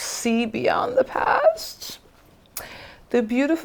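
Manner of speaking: high, teary voice on the verge of crying. Reading cards aloud in an old oracle voice, getting emotional. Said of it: "Why am I getting emotional for no reason?".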